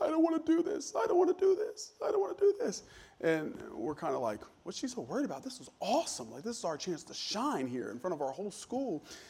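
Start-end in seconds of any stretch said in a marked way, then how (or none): 0.0-2.8 play-acted very high, tearful sobbing voice. Speaker recalls a girl backstage before a school performance: imitating someone crying. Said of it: "she's back there and she's like crying".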